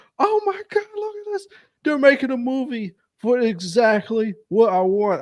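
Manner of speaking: thrilled, very high-pitched, swooping excited yelling. Speaker retelling how he yelled at his girlfriend on the phone, retelling his own excited yelling. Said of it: "I was yelling at her on the phone".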